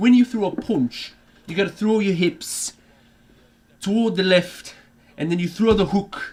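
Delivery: put-on high, loud Sunderland accent. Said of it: "picked up on that accent".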